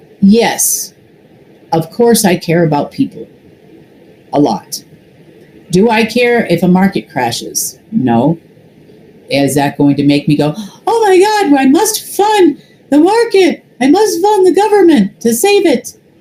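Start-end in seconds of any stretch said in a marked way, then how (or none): 10.6-15.9 ridiculous, very high cartoon mouse voice. Mocking people they call ridiculous, the speaker slips into a Pinky voice. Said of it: "I use that voice because it kind of sounds like Pinky in the Brain".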